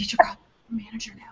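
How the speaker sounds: hushed whisper. Speaker retells telling a man to get his manager while the baby is almost asleep, whispering. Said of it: "So I'm like whispering".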